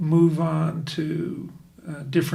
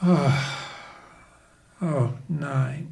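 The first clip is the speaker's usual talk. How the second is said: mock words carried out on a deep sigh; 2 semitones lower than usual. Describing how early-stage patients answer a pain rating, imitating a patient's deep sigh. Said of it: "That deep, deep sigh that just comes out".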